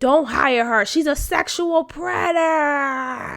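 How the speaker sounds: irate, furious outburst with "predator" drawn out. Retelling an irate mother telling the employee not to hire her: imitating an irate mother. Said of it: "making more of a commotion".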